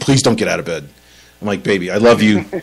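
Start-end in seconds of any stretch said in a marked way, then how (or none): 0.0-0.9 acted pleading, begging tone. Retelling how she begged him not to get out of bed, mock-begging. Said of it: "She's, like, begging me".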